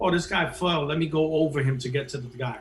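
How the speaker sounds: ordinary talk, nothing marked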